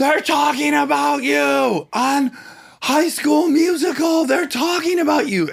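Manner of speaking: thrilled shouting, pitched very high. Retelling someone running downstairs with big news: imitating excited yelling. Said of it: "she's yelling".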